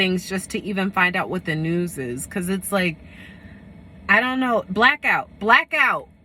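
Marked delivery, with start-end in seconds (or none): 4.7-6.0 loud shouted outburst, word said twice. Warning about a coming blackout, yelling. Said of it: "sorry, I'm yelling".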